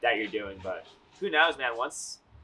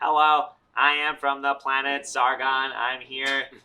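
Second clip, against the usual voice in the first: loud, flat, slow put-on robotic alien voice; 2 semitones higher, 5 dB louder than usual. Doing a robot voice himself without the effect, robot voice. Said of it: "I can just do this myself though".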